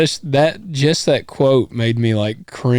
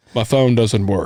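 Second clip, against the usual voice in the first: put-on robotic voice; 2 semitones lower than usual. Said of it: "You were in, like, robot mode".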